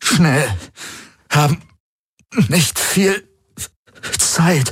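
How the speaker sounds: very high, halting panting through gritted teeth. Reading a pained character's words in a story, panting through clenched teeth. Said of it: "keuchte er mit zusammengepressten Zähnen".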